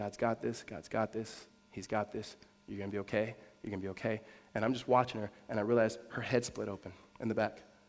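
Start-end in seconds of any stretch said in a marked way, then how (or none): 0.0-4.2 hushed, quiet half-whisper. Retelling a mom half-whispering in an injured brother's ear: imitating someone half-whispering. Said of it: "she's just whispering in his ear".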